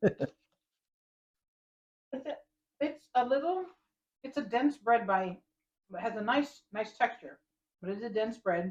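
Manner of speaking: speaking while chewing. Asked for first thoughts on the bread, the taster answers with mouth full, chewing. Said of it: "Sorry, chewing".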